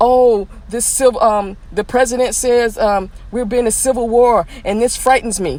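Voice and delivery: ordinary talk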